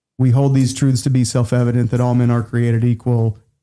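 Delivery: droning, flat monotone, never changing pitch. Imitating how he read aloud in class, on one flat pitch. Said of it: "he spoke with a very monotone voice, ... and never change pitch the entire class".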